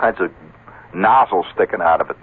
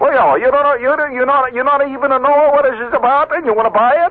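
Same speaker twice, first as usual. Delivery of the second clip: bad put-on Greek accent, much higher. Retelling Nick's reply to a would-be buyer, imitating Nick's bad Greek accent. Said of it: "That's a bad Greek accent".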